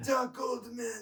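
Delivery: put-on stray Japanese accent, very high, very loud. Playing a character who yells a warning at an old man: Japanese-sounding accent. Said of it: "somehow that turned Japanese".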